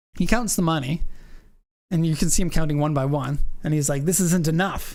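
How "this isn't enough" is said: loosely done, put-on Ukrainian accent. Retelling what a car seller said while counting money: imitating a ukrainian accent. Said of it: "I wish I could do his accent a little bit better".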